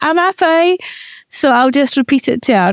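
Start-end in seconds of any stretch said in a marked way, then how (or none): 0.0-0.8 high, really bad put-on Liverpool accent. Repeating a Love Island line to wind her up, bad Liverpool accent. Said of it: "in like a really bad like Liverpool accent".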